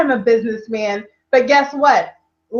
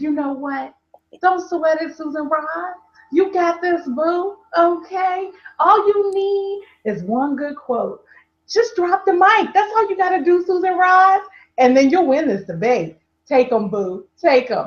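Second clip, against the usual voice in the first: smooth put-on commercial voice, higher; 4 semitones higher than usual. Retelling a pep talk given over the phone: Colt 45 voice. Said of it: "my Colt forty-five voice".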